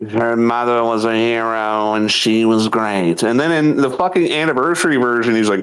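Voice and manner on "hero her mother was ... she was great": put-on villain voice, pitched lower. Retelling a game villain's line from the original version: Jack of Blades voice. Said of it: "you said they changed his voice".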